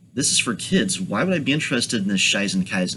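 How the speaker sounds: ordinary delivery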